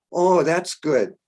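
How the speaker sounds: put-on heavy German accent. Speaker retells Deva asking if they are nervous: Deva's strong German accent. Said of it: "A strong German accent".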